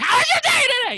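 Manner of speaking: shrill, very loud, high-pitched yell at full blast. Doing an impression for the other speaker: Sam Kinison impression. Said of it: "This is my Sam Kinison impression".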